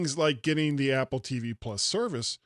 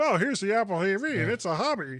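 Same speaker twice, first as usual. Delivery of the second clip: put-on, announcer-style corporate spokesman voice; 6 semitones higher than usual. Mocking how apple presented its product, in a put-on voice. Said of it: "I don't know why I'm talking like this".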